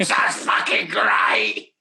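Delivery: creepy, slow, creaky whispered doll voice.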